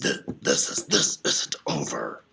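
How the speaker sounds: deep, very low, rumbling growl. Narrating a story, wounded Pashashakti speaks before limping away, growling. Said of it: "he growled".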